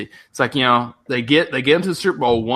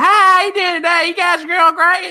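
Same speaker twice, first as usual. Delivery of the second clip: very high-pitched, loud Appalachian accent; 5 dB louder than usual. Speaker demonstrates the East Tennessee accent to Jack: high-pitched Appalachian accent. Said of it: "that Appalachia accent, which is real high pitched and tongue talking".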